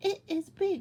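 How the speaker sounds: bright, excited, very high and loud. Showing how to read a sentence with an exclamation mark aloud, excited. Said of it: "we have to say it with excitement".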